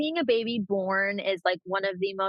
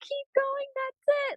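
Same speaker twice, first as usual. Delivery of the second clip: put-on screamed cheer, higher pitch. Retelling cheering on a pushing patient down the hall: imitating own screaming cheer. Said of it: "they can hear me screaming from down the hall".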